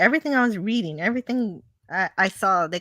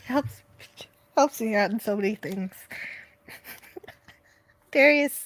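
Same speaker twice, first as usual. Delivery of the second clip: talking through uncontrollable laughter. Reading out chat comments, laughing while talking. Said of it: "I can't stop laughing".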